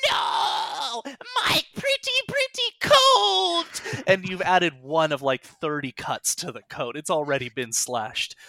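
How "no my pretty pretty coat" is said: very high, very slow, drawn-out hag screech. Voicing the hag as her coat is slashed: hag screaming. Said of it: "and she screams".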